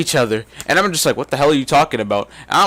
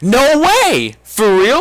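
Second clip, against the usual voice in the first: mock excited disbelief, loud, swooping, very drawn out; 8 semitones higher, 5 dB louder than usual. Retelling own reaction to a girl's confession: imitating own excited reaction. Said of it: "all excited sounding".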